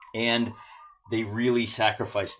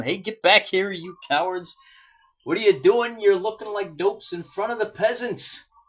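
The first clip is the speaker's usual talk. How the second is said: commanding officer's hollering yell, pitched up; 9 semitones higher, 4 dB louder than usual. Narrating a tabletop battle, voicing a commander: acting out a commander yelling. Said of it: "he's yelling at 'em".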